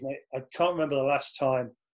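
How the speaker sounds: usual speaking voice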